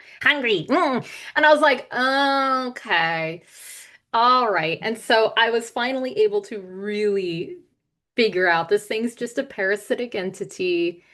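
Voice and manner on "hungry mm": goofy, silly little gremlin voice. Retelling what a parasitic entity said, in a silly little gremlin voice. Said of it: "just like that".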